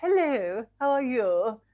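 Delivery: exaggerated posh voice. Retelling the speaker's nan greeting the speaker's boyfriend; much posher put-on voice. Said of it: "Much posher than usual".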